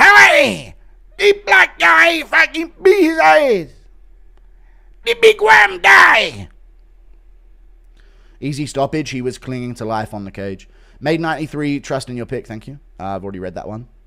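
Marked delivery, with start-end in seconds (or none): 0.0-6.5 very high, very loud yell, swinging wildly. Break down what just happened, doing a Yoel impression. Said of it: "Impression of Yoel breaking down what just happened".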